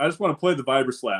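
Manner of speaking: normal talking voice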